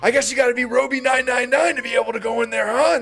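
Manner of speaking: imitated crazed voice. Retelling how a friend's ex-wife confronted a cast member: imitating someone crazed. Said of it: "she's all fucking crazed".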